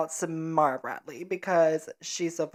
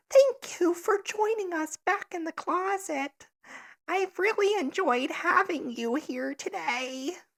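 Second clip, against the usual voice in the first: put-on very high nerdy little-boy voice; 13 semitones higher than usual. Trying out voices for the other speaker: nerdy little boy voice. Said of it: "That one's just nerdy little boy".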